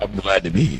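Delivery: radio broadcaster voice. Greeting the show's host after being welcomed: radio voice. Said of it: "look at that radio vo-, that radio voice".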